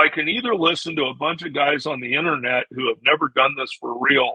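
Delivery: plain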